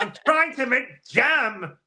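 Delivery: high, loud put-on American accent. Quoting a woman's lines, in an American accent. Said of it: "is that your American accent?".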